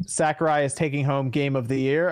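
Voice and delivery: ordinary talk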